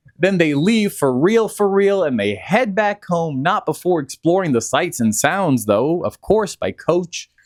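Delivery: ordinary delivery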